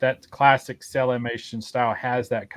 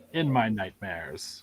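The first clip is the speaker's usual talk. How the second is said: low, deep animated-villain voice; 4 semitones lower, 5 dB quieter than usual. Quoting a cartoon villain line: Mister Freeze voice. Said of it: "Maybe I should start quoting, uh, Mister Freeze".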